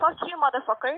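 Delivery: furious, angry outburst with cursing. Answering a returned phone call with an insult: angry.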